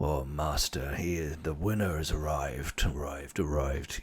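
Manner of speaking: echoing, rolling, stereophonic alien creature rumble. Voicing an Ithorian announcing that the winner has arrived: stereophonic rumbling voice. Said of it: "stereophonic and kind of rumbling out".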